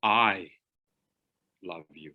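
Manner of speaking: heavy emphasis hitting the word "I". Showing how keying one word changes the meaning: stress on i. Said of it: "If I key one of those words, I love you, not Joe".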